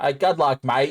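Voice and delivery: slow, laid-on put-on Australian accent. Joking around with others, a line in a put-on australian accent. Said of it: "That sounds perfectly Australian".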